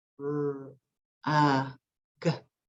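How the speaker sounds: slow, each sound sounded out separately. A teacher showing boys and girls how to say a word's sounds, slowly. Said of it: "say the sounds in the word rug slowly".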